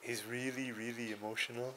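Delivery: soft, put-on male-model voice.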